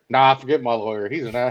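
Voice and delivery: plain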